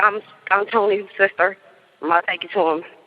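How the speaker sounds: normal talking voice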